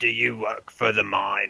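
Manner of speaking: rough, bubbling creature voice gurgling from deep inside. Voicing a being heard inside a character's head, in a gurgling voice. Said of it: "you hear the same gurgling voice".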